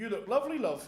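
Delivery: put-on thick, warm-sounding local Yorkshire accent. Retelling what Tony said to Sarah, imitating Tony's Yorkshire accent. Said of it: "Like in that Yorkshire accent".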